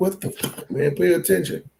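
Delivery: put-on fed-up irritated outburst, high and rough. Retelling yelling at a driver whose car went on two wheels: retelling an irritated outburst. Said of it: "Dude, I was irritated".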